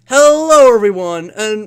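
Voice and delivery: put-on bland, generic general American accent. After a friend praises his impression, speaker tries it again; MatPat impression, generic American accent. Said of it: "generic, like... northwestern accent".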